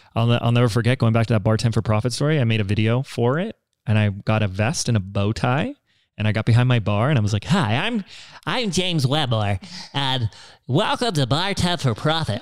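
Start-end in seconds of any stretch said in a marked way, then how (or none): 7.4-12.3 put-on slow teenage puberty voice. Reenacting his younger self introducing his bartending video; imitating his own puberty voice. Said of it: "So that's my puberty voice".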